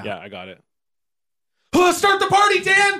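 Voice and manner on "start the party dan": terrified, frightened, fearful. Asked to say the line as if zombies are coming over the hill, terrified. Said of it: "Say it like a bunch of zombies are coming over the hill towards you".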